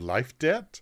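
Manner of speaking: kobold character voice. Voicing the kobold Meepo answering a player's question: Meepo kobold voice. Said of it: "And Meepo looks at you".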